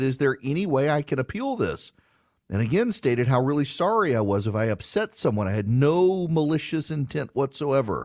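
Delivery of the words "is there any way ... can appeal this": plain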